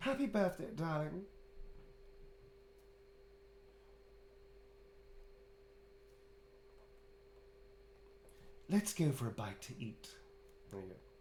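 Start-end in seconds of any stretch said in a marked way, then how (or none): 0.0-10.1 character voice pitched way up, swooping. Writing a birthday message as Astarion: Astarion voice. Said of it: "That's from Astarion".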